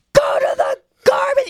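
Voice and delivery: play-acted very high, cranky, half-asleep scream. Retelling how a half-asleep Andrew yelled at his daughter, imitating Andrew screaming. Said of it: "He's screaming at his daughter".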